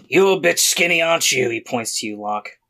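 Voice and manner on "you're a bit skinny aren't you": rough, gravelly, pitched-up character voice. Narrating a character who walks up to three players and speaks, gravelly voice. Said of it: "sometimes the gravelly voice takes a lot out of me".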